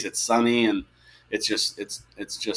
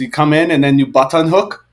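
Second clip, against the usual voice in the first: put-on French accent, high and raised; 5 semitones higher, 7 dB louder than usual. Imitating a coach talking to the players, French accent imitating MJ Graham. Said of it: "his French accents on stuff".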